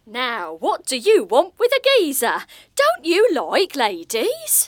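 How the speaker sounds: clumsy fake accent with Welsh accent slipping through. At a read-through, an actress reads her character's line in a bad put-on accent. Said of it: "Sounds like [name] on a day trip to Aberystwyth".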